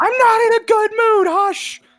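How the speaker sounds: loud yelling, shouting voice. Voicing Lorelei snapping at a shipmate checking in: yelling. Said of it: "You don't have to yell in my head".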